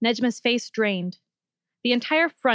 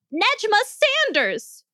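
shrill, very high bellowed shout; 11 semitones higher than usual. Narrator reads a doctor calling out to a small teenager, bellowing. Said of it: "Saltzman bellowed".

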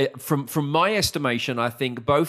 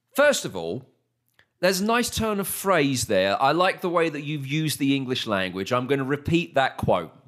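ordinary delivery

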